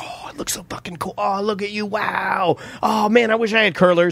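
over-the-top fake, gushing, overdone excitement. Retelling praise given to a daughter in curlers: retelling own overdone excitement. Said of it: "and I overdid".

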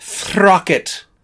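loud, grand, theatrical British stage-actor declaiming. Repeating a name from the conversation, British stage actor voice. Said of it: "I'm gonna say it like a British stage actor".

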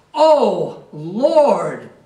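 loud, powerful, jubilant celebrating cry. Speaker reading scripture, acting out how David said it, imitating David's powerful cry. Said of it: "some power in his voice".

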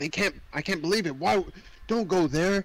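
play-acted crazed, frantic, panicky, freaked-out voice. Retelling how carriage passengers react to a castle trip: imitating people freaking out. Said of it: "they're so, like, freaking out".

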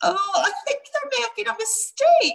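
very high-pitched yelped cry. Lumi, her feet lifting off the ground, calls out hoping someone hears: yelped. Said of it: "she yelped".

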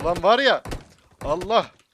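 loud, high, exasperated, frustrated outburst.

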